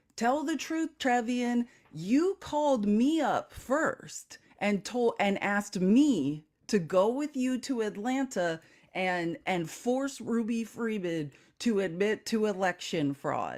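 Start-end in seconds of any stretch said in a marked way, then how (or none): none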